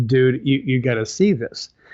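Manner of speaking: normal talking voice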